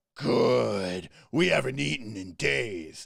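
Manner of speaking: slow, rough, creaky ogre voice, drawn-out good. Voicing ogres who answer their boss: ogre voice. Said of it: "And then the ogres go".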